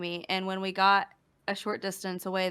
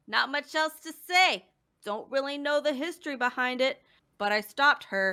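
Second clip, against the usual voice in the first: attempted New Jersey accent, pitched up; 6 semitones higher than usual. Redoing a take after apologizing, trying a new jersey accent. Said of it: "let me see if I could do a New Jersey accent".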